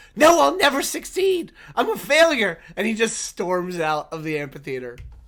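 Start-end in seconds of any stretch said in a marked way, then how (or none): 0.2-2.6 very loud, high, shrill, top-of-lungs shout. A character stands up before storming out of the amphitheater, shouting at the top of his lungs. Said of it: "shouts at the top of his lungs".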